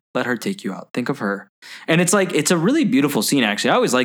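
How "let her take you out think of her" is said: put-on calm voice. Retelling a movie scene of a dying man being told the truth: imitating a calm Liam Neeson. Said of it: "he goes really calm and he goes".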